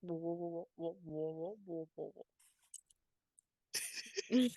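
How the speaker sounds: low mumble under the breath, repeated words. Voicing an armored soldier who starts mumbling something: mumbling very low. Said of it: "he starts mumbling something very low".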